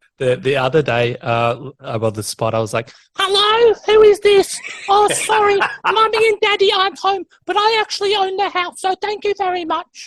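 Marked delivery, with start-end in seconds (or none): 3.2-10.1 put-on very high three-year-old girl voice. Retelling answering a call from an unknown number: three-year-old girl voice. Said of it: "I could only play like a three-year-old girl".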